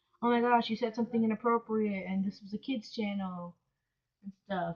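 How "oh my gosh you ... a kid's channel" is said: ordinary delivery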